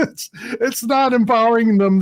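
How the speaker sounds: high, laughing through the words. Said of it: "I'm sorry I'm laughing".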